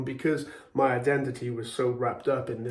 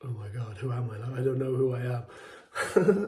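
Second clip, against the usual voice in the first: mock freaking-out, slow, drawn-out panicked voice. Recalling standing there early in the morning, the speaker re-enacts their panic: retelling a panic. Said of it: "I just started freaking out, panicking".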